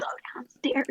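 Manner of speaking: soft, hushed whisper. Retelling secretly telling a dog to go downstairs: imitating own whisper. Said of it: "I'm whispering".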